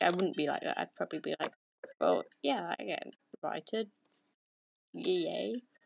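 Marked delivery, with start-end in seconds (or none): 2.0-5.6 slow, deliberately underwhelmed, unexcited delivery. Acting out a reaction to being invited: acting unexcited. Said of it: "That doesn't sound very excited".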